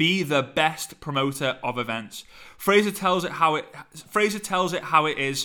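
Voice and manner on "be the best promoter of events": usual speaking voice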